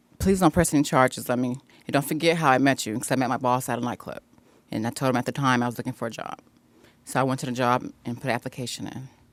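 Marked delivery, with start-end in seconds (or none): none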